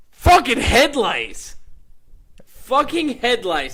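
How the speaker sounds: mock rant, high-pitched, slow and loud.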